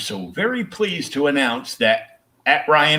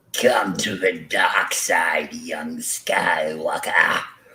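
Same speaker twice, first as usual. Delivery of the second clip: put-on sinister villain voice, lower pitch; 6 semitones lower than usual. Quoting a villain's line to friends: Emperor impression. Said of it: "that's really good".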